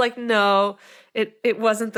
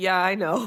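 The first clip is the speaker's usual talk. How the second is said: mock, utterly deadpan and unimpressed; 3 semitones lower than usual. Retelling a TV character's reply: imitating a deadpan line. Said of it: "totally just, like, deadpan".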